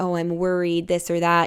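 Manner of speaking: ordinary talk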